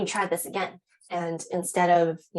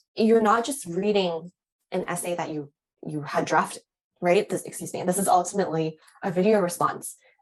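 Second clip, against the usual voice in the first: ordinary talk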